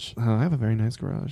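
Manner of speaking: whispered speech. Answering a question about an expensive garage: whispering. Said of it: "Why are you whispering".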